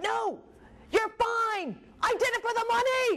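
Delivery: put-on, very high, drawn-out screaming. Recounting a shouting argument with him, retelling a scream. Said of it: "I'm screaming".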